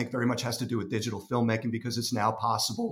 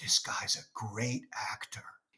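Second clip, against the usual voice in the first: soft, confiding, leaned-in whisper; 2 semitones lower, 8 dB quieter than usual. Retelling a remark whispered during a film screening: imitating John Turturro whispering. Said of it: "he sort of whispers".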